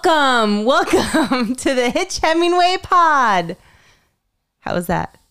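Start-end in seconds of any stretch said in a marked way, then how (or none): 0.0-3.6 full, loud, booming charismatic voice, higher. Opening the podcast while channeling the co-host, in a full, loud, charismatic voice. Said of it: "make my voice like full and loud and charismatic".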